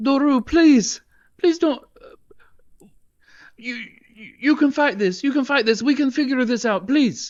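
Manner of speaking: very high, terrified, frightened pleading cry. A terrified character yells out from behind a companion, begging him to stop: terrified pleading yell. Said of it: "she kind of yells out from behind you".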